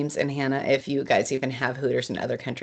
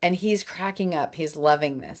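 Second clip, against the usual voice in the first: normal talking voice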